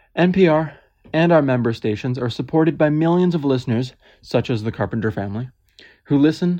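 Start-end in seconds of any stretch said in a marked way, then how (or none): none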